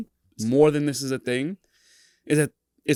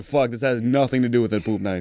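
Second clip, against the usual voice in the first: ordinary talk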